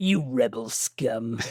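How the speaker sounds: low-pitched cereal-box mascot voice. Quoting a line from a movie scene: cereal mascot voice. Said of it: "He says it like a cereal mascot".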